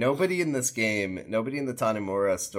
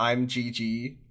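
play-acted boozy, boastful yelling; 3 semitones higher than usual. Retelling how a man in a bar was caught: imitating someone yelling. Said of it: "in a bar yelling".

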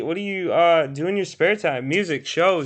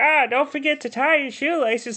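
put-on high, old-sounding older woman voice; 8 semitones higher than usual. Imitating a mom's reminder, voice like Ray Romano. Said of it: "your mom sounds exactly like Ray Romano".

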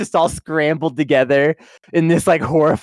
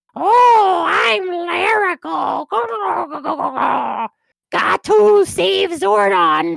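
weird growly voice, very high, slow; 13 semitones higher than usual. Imitating how a character talks in the show: Larigo's weird growly voice. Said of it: "he talks in his, like, weird growly voice".

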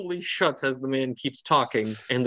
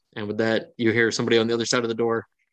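ordinary delivery

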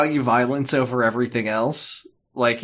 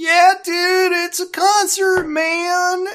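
high-pitched dude voice. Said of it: "someone was gonna turn around".

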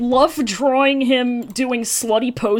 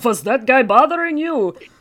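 classic movie vampire count voice. Describing a character coming back with a cape, speaker talks in Dracula voice. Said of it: "talking in Dracula voice".

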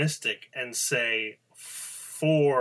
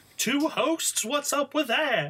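squeaky delivery, done badly on purpose; 13 semitones higher than usual. Opening a news radio show with a co-host, doing a terrible Seinfeld impression. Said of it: "terrible attempt at a Seinfeld impression".

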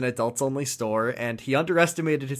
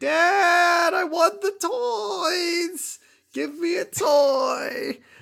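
put-on very high, slow, drawn-out child's tantrum wail. Retelling a boy demanding toys from his father: imitating a child's temper tantrum. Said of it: "absolutely throwing a real temper tantrum".

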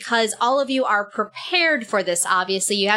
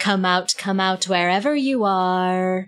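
creepy, eerie echoey voice, much slower; 2 semitones lower than usual. Game master voicing an unseen figure calling to the party, creepy, echoey voice. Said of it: "but it's also really creepy and echoey".

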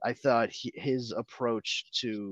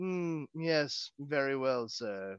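deadpan, flat butler voice, delivered slower; 4 semitones higher, 4 dB quieter than usual. Discussing how Alfred should speak to Bruce, showing a dry Alfred impression. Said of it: "I don't think he should be as dry as like".

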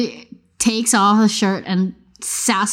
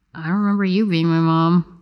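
grumbled sassy backtalk; 3 semitones lower than usual. Voicing a character answering back under her breath: muttered under her breath. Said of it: "Under her breath, but not so quiet that you don't hear".

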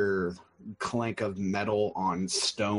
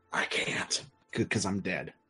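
muttered quietly under the breath. In a tabletop game, the narrator voices a slain wolf, muttered under his breath. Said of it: "the wolf says under his breath".

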